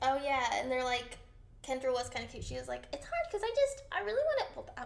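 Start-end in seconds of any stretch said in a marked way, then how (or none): 2.9-4.5 very high-pitched imitated voice. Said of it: "what was that voice?".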